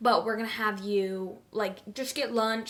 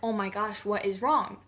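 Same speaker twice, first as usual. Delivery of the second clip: put-on crying voice. Retelling being taken to the children's hospital ER: retelling own crying words. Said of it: "crying super hard 'cause I'm like".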